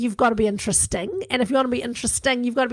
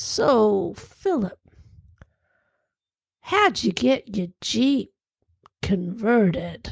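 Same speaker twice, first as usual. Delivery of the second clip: painfully deliberate, very slow, drawn out, word by word; 2 semitones lower than usual. Retelling a dinner neighbor's question to Philip, imitating very slow speech. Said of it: "he literally spoke that slowly".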